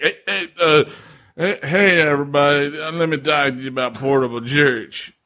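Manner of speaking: put-on drunken delivery. Imitating how the other person opened a commercial, mimicking a drunk-sounding delivery. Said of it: "did you sound like you were drunk".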